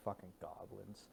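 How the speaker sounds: very quiet mumble, muttered under the breath. A player in a tabletop game has her character speak: muttered under breath. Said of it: "mutter under my breath and just be like".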